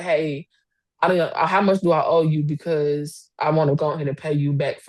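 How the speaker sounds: imitated quiet, calm tone. Retelling how Chris came in and spoke: imitating a quiet, calm voice. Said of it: "he talking in his real quiet, calm voice".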